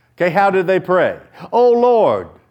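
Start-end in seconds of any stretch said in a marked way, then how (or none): 1.5-2.2 high-pitched, loud crying out. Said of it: "they're crying out".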